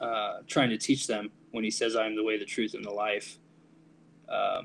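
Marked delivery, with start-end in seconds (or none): none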